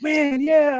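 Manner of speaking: mock thrilled, childlike delight, high and excited wonder. Imitating a chat member's voice: imitating Bipolar Chris's excited voice. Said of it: "like he's seeing the coolest thing ever".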